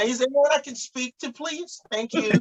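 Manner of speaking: very high, put-on fake American accent. Acting out a phone call where people hear the American voice: put-on American voice. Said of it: "when they hear the American voice".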